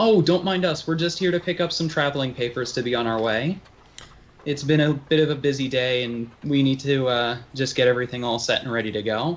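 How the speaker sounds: glad, eager, very happy and cheerful. Greeting a stranger as if meeting an old friend, very happily. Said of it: "and very happily go".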